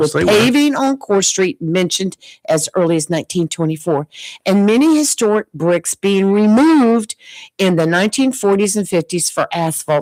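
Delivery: ordinary talk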